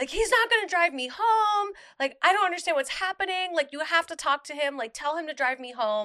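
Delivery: play-acted, high, scared, crying screaming. Recounting a phone call to the speaker's mom, retelling screaming. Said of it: "and I'm like screaming".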